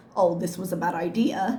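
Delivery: ordinary delivery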